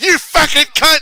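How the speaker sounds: very high, very loud, top-of-lungs shrill scream. Retelling what can be heard on a concert video, imitating a top-of-the-lungs scream. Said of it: "he screams at the top of his lungs".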